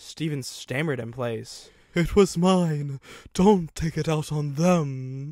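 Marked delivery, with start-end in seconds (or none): 1.9-5.3 wheezing, higher, louder, slower. A badly damaged engine speaks to Steven, wheezing. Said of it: "it wheezed".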